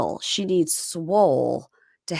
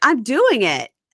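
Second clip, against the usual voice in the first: mock irritated, fed-up tone, loud and high; 5 semitones higher, 5 dB louder than usual. Retelling an inmate's reply to guards pressing her: imitating someone annoyed. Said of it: "And she gets annoyed".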